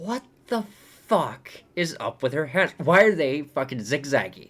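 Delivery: genuinely irritated, annoyed ranting. Speaker remembering scenes while talking, genuinely getting annoyed. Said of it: "You can hear it in my voice that I'm getting fucking annoyed".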